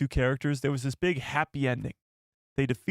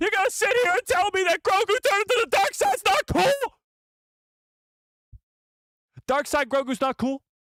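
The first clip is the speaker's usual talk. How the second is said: excited raised voice, very high and swooping; 5 dB louder than usual. Arguing with listeners who disagree with him, raised voice. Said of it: "I might have raised my voice there".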